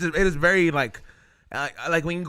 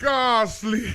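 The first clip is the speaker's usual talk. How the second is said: put-on Jamaican accent, pitched up; 5 semitones higher than usual. Joking about how a Pokemon would talk in Jamaica: put-on Jamaican accent. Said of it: "the Ghastly in Jamaican".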